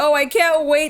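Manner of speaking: put-on sarcastic tone. Retelling own past reply to a request: imitating own sarcastic reply. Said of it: "so sarcastically".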